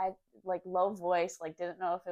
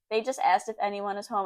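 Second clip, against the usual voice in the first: plain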